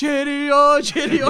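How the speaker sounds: high, loud, gloating delivery.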